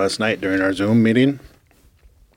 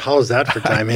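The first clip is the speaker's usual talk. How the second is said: ordinary talk, nothing marked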